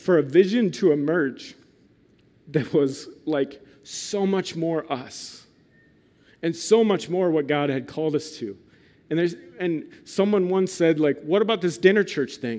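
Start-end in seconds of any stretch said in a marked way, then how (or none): 0.0-8.6 voice catching on held-back tears. Speaker recounting how a vision for the church emerged, choking up, near tears. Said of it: "I'm going to cry".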